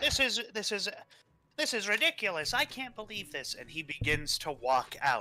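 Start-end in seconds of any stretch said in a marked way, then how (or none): 0.0-3.5 frog creature character voice, pitched up. Game master voicing a frog who hops down from his throne, frog voice. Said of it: "You see the frog goes".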